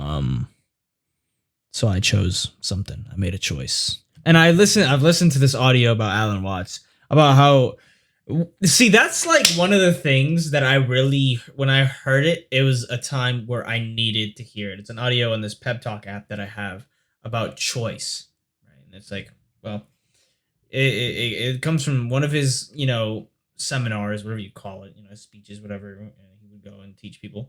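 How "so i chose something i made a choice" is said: low-pitched, subdued, quiet talking voice. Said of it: "I'm speaking low".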